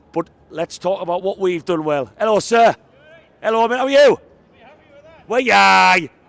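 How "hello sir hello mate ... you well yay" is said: loud, high-pitched shouting. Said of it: "Sorry if I just shouted in the microphone there".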